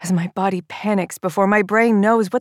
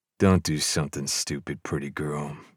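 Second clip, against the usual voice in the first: very low, hushed, soft, sultry, almost sensual; 9 dB quieter than usual. An armed man speaks as the narrator reaches for the door, soft, almost sensual. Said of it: "His voice is soft, almost sensual".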